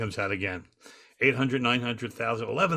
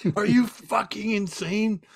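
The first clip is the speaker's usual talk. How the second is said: put-on angry screaming, pitched higher; 10 semitones higher, 4 dB louder than usual. Retelling a story where one person screams at another: imitating Mullins screaming. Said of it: "He just starts screaming at him".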